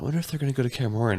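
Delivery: quiet, hushed half-whisper under the breath. Retelling what was said to a wife during an episode: imitating own half-whisper. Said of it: "I whispered it to Rachel".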